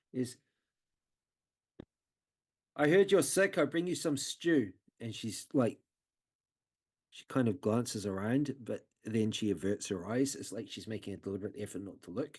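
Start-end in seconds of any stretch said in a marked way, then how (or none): 0.1-4.7 slightly too loud, somewhat high-pitched. Retelling what a woman said on arrival, a little too loud. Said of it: "she says like it's like almost a little bit too loudly".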